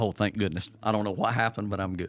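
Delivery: ordinary delivery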